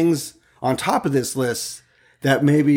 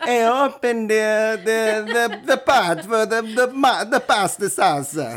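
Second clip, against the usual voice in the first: very slow, deliberate, high put-on Italian accent; 7 semitones higher than usual. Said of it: "I sound Italian".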